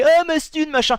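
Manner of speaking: angry, high-pitched crowd yelling. Retelling how people reacted to a sponsored video: imitating people yelling. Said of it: "Les gens qui ont gueulé".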